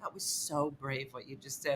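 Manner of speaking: very soft, quiet, dead-earnest sincere tone. Retelling how someone praised a failed comedy set: imitating Jeremy being sincere. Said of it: "he was being so sincere".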